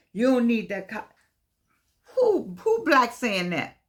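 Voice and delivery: riled-up, heated outburst with swooping pitch. Reacting to something they heard someone say, worked up. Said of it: "Let me calm myself down".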